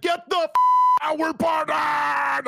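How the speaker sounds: put-on excited yelling, slowed down. Recalling getting an email during dinner at home, retelling an excited shout. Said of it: "I threw my phone across the room".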